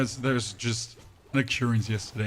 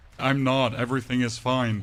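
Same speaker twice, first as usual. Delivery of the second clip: ordinary talk, nothing marked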